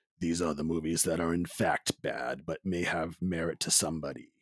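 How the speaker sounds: movie announcer voice. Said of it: "I decided to go with my movie guy voice".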